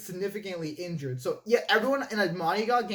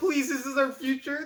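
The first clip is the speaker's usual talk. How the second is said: put-on pleading voice, higher; 5 semitones higher than usual. Retelling what the doctor said when he showed up armed: imitating the doctor pleading. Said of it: "He's just like".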